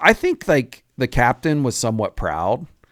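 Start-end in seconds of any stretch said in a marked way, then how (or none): none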